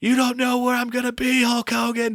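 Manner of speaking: acted, very high, wild screech. Describing a wrestling movie scene, the speaker is imitating Sensational Sherri screaming. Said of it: "just screaming like".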